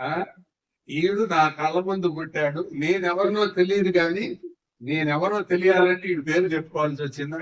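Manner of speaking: ordinary talk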